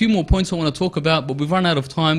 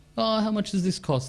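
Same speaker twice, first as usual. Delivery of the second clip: soft, gentle, put-on puzzled and curiously confused voice; 4 semitones higher, 7 dB quieter than usual. Imitating a woman talking to a male seller, in a mock curiously confused voice. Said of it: "the curiously confused voice".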